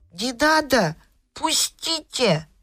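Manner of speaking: high voice, spoken through the nose. Narrator voicing the young elephant answering the crocodile, speaking through the nose. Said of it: "И он сказал в нос вот так".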